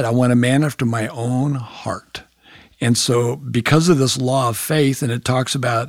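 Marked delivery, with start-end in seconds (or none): none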